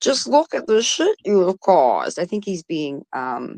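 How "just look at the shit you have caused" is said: facetious, sarcastic, comical character voice. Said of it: "talking to you in his P B R voice".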